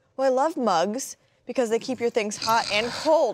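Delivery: high, earnest, totally sincere celebrity-style voice. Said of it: "it was [name]".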